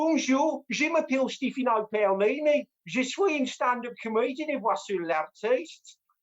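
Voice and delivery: French in a Brummie accent. A stand-up comedian showing off accents speaks french in a brummie accent. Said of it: "I'm learning German with a West Country accent".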